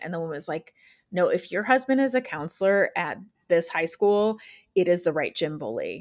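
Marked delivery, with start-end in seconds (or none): none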